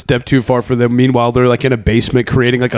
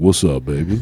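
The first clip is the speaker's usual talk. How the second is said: smooth sexy R&B voice, lower and quieter; 8 semitones lower, 5 dB quieter than usual. Voicing Clippy as a joke: sexy R and B voice. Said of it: "a sexy R and B voice".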